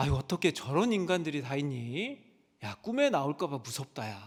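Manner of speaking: put-on Jeolla dialect accent. Quoting mother reacting to the news: poor imitation of Jeolla dialect. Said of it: "전라도 사투리로 하는데 제가 표현을 잘 못하는 것 같습니다".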